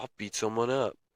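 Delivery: put-on very quiet, hushed, soft stoner surfer voice. Describing how Koa talks, the speaker quotes him in Koa's stoner surfer voice. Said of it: "in his stoner surfer voice".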